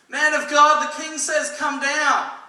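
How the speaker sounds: very loud call, shouted up from below. Retelling the king's men calling out to Elijah; retelling a yell. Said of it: "they yell out to him".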